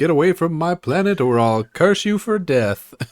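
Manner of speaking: high, eerie, haunting, spooky ghost voice. Narrating a game scene, a ghost voice falls out of a character's mouth: spooky ghost voice. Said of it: "out falls a spooky ghost voice that says".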